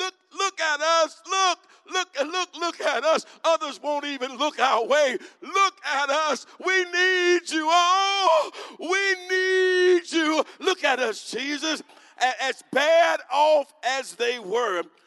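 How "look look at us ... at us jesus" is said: very high, loud, begging, pleading wail. Acting out lepers calling to Jesus for help: acting out lepers calling loudly. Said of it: "they made a loud noise".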